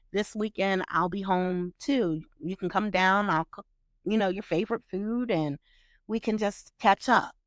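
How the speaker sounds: ordinary talk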